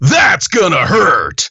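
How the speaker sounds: put-on voice with feeling, high and swooping. Redoing a line on request, in the Contra 4 voice. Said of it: "do it in the Contra 4 voice".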